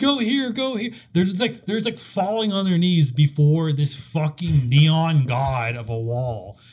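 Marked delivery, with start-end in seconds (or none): 0.0-0.9 shrill, very high, desperate, pleading screaming. Retelling two players running up to a wall, retelling screaming at a wall. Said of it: "run up to the wall screaming".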